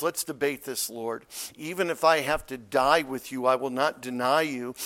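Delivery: ordinary talk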